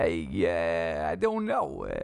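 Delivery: put-on New York accent with "yeah" drawn out. Explaining that chewing gum makes them slide into a New York-ish accent. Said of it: "I keep sliding into this kind of New York-ish accent".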